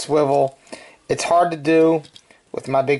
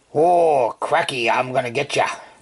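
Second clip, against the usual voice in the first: bad, weak put-on Australian accent. Talking about someone holding a gun, bad Australian accent. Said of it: "I don't do a good Australian accent".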